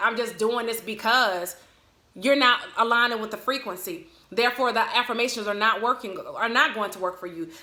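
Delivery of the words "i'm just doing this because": plain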